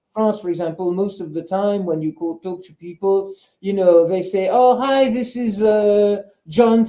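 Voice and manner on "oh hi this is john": fake Arabic accent, very slow and drawn out. Imitating people who answer when you call: imitating an Arabic accent. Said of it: "with an Arabic accent".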